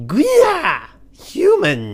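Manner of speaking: very high, very loud, booming, swooping goblin screech. Voicing a goblin henchman, the speaker puts on a goblin voice. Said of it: "Gotta get some goblin voices on".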